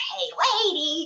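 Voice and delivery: very high-pitched, horrible-sounding comic voice. Imitating an old comedian's catchphrase: horrible Jerry Lewis voice. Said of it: "kind of horrible voice".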